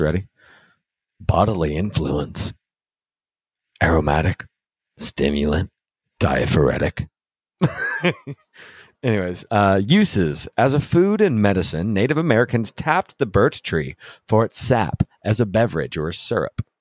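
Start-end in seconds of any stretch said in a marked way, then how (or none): 1.2-7.1 low, stern voice. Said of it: "here's a good one for Bruce".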